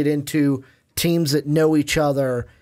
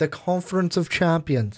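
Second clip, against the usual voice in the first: affected, put-on British pronunciation. Correcting the other speaker's pronunciation of a conference name, in a British accent. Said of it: "I don't know why I'm putting like a British accent on it".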